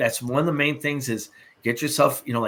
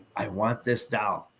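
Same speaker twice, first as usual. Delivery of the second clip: firm, adamant, unbending, insistent tone; 4 dB quieter than usual. Retelling a woman's demand for the doll: imitating an adamant demand. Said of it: "she was very adamant".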